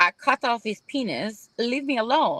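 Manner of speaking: put-on speaking with Ecuadorian accent. Retelling what a woman still getting his letters said, thick Ecuadorian accent. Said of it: "with her thick Ecuadorian accent".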